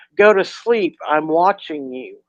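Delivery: plain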